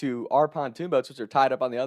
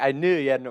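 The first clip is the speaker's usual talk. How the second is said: ordinary talk, nothing marked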